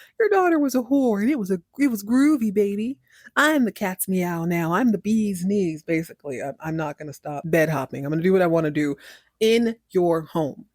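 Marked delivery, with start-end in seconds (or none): 0.2-5.8 exaggerated corny put-on voice. Recapping a show scene, exaggerating a character as corny: exaggerated corny Jeff voice. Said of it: "I'm going to exaggerate this scene because I do believe he's corny".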